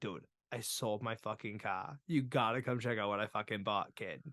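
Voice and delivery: heavy put-on Boston accent. Retelling what a guy said to him, in a thick Boston accent. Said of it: "he's got the thickest Boston accent".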